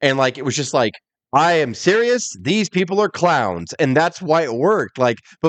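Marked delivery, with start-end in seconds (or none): 1.3-3.7 deadpan, dead-serious interviewer voice. Imitating a wrestling announcer in a tuxedo: deadpan Gene Okerlund voice. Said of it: "he would deadpan".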